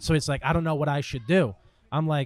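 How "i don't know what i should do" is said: plain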